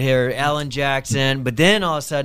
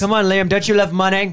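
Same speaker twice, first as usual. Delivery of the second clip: poor put-on British accent, higher pitch; 7 semitones higher, 4 dB louder than usual. Calling out jokingly to Liam to join them: bad British accent. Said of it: "my Texas, uh, British accent's not so hot".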